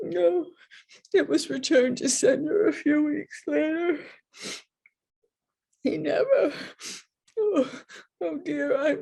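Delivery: tearful, breaking-down voice. Telling Graham how her letter to his grandfather came back, crying. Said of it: "I'm sorry to cry".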